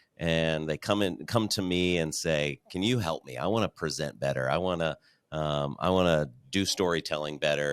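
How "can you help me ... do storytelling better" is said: ordinary delivery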